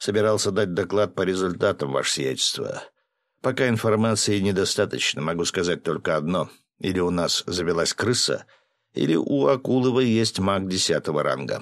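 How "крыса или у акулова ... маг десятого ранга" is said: ordinary delivery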